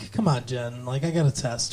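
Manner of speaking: condescending, easygoing, soft and calm talking-down tone. Retelling how a character answers an eager girl: imitating a calm, condescending tone. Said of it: "talking down to her".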